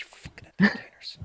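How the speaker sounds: annoyed, fed-up, pissed-off tone. Narrating a game, voicing a guy stuck dealing with Captain Flashbang: pissed-off guy. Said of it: "This guy is so pissed".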